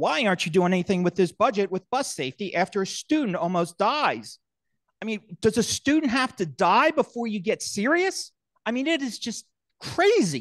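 heated, agitated, riled-up, worked-up voice. Confronting those holding the school budget, getting riled up. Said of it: "I'm getting a little riled up".

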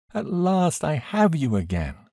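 crying out with joy. A daughter reunited with her father, clinging to him, crying out with joy. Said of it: "I cried, clinging to him".

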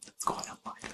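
very quiet, hushed whisper. Discussing england's chances of topping the table, adding a whispered aside.

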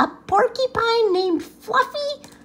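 very high howl, spoken through laughter. Narrator reading the rhinoceros's reply to the porcupine fluffy, howling. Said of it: "Howled the rhinoceros".

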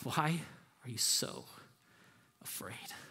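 gentle, hushed, low, soft, breathy near-whisper.

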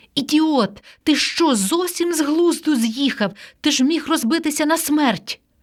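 scared, reproachful scolding, pitched high. A woman kneels beside a man lying sprawled on a roof, frightened. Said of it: "вона була налякана не менше за мене".

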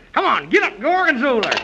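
angry, exasperated, furious and fed-up voice. Urging the horse gorgonzola to get up: acting very angry. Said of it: "I'm so mad I can see double".

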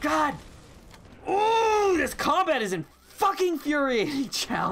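furious high-pitched rant. A gamer struggling with the combat while playing, furious at the game. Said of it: "I'm so mad right now".

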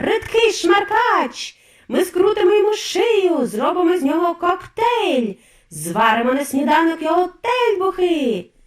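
wailing, high, loud howling yell. The witches, hearing a boy owns the mice, are howling. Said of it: "заволали відьми".

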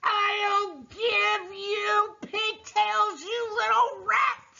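shrill, very high-pitched, drawn-out yelling. Narrating a scene where a girl is swung round by her pigtails; the swinger yells: yelling. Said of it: "the Trunchbull was yelling".

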